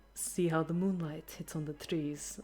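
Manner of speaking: soft, quiet speech in a Russian accent. Showing how to describe a scene in the Countess's voice, in a Russian-sounding accent. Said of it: "that was more Russian than the Countess's voice".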